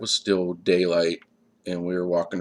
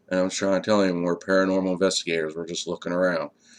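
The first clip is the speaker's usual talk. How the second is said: ordinary talk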